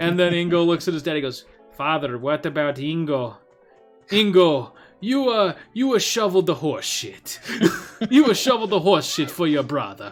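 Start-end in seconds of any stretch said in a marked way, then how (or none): 1.8-10.1 put-on Italian accent, much slower. Telling a story of a father and his sons, voicing them: Italian accent. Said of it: "the Italian accent".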